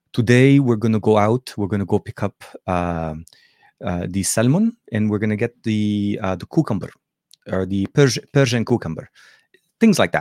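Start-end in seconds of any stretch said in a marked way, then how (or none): 0.1-9.0 put-on heavy Arabic accent on English words. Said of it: "if I wanna channel my mom's conversation".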